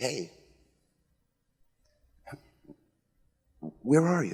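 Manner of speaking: plaintive, searching, open, curious, vulnerable call. Voicing the question asked of Adam and Eve, plaintive, curious, vulnerable. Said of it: "more plaintive, more curious, more vulnerable".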